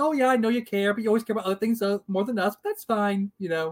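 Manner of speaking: put-on blasé voice. Recapping how Scott dropped his bombshell, mimicking Scott's blasé tone. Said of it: "it's like he's fine with it".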